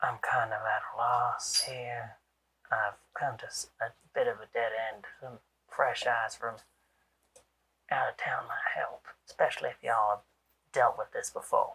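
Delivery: hushed whisper. Voicing a detective who leans in, hand over mouth: whispering. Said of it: "kind of whispers to you".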